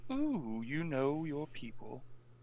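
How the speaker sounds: slow, impressed "ooh" with patronizing edge. Playing a character looking at the knight: impressed but condescending. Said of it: "a little impressed, but almost condescendingly".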